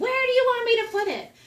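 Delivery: shrieking meltdown scream, very high and very loud. Retelling a child's meltdown over putting laundry away: imitating a child screaming. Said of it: "screaming at me".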